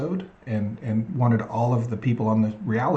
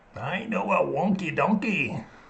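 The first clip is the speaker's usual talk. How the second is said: put-on Scottish accent, pitched higher; 7 semitones higher than usual. Trying the joke again after hearing it in a Scottish accent: Scottish accent. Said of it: "now I'm hearing that with a Scottish accent".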